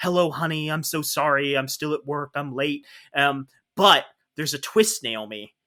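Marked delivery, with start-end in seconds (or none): 0.0-2.8 acted soothing, really patient, understanding tone. Retelling a film scene where she answers a phone call at work, imitating a patient, understanding tone. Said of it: "really patient, like understanding tone".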